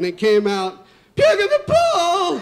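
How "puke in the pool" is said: very high exclamation with voice cracking. Retelling shouting about vomit in the pool: imitating own voice cracking. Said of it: "my voice cracked".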